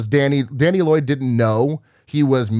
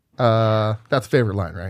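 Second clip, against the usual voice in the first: ordinary talk, nothing marked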